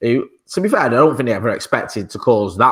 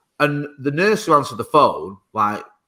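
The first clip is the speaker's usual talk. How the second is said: ordinary delivery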